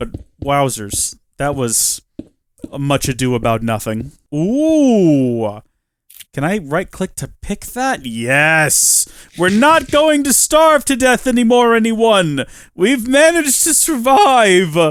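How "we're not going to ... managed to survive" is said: very high, loud voice cracking. Reacting in a game after picking up an item, voice cracking. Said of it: "My voice cracked a little bit there".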